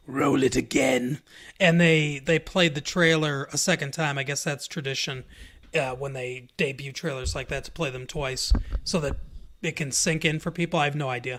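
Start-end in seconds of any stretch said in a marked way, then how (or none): 0.2-1.2 put-on evil ruler voice, lower and slower. Retelling a request after the trailer at Star Wars Celebration, in the Emperor's voice. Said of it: "he said in that that Emperor's voice".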